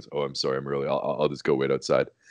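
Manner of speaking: low, slowed voice. Retelling an interview interrupted by a knock at the door: deep Jon Hamm voice. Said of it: "you hear this deep voice goes".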